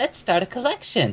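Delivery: put-on, very high-pitched Valley Girl voice. Voicing a player character answering the game master: valley girl voice. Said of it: "like a Valley Girl's voice".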